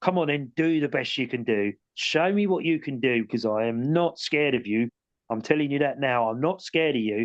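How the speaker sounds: really stern, firm voice. Retelling confronting an unseen presence he could hear, in a real stern voice. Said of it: "real stern voice".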